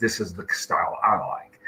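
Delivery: normal talking voice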